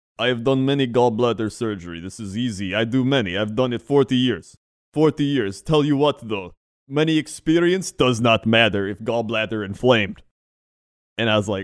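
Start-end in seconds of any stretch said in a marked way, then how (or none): 0.2-10.2 put-on Eastern European accent with an old man's manner. Retelling what an old Eastern European surgeon said: imitating an old Eastern European surgeon. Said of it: "old Eastern European man".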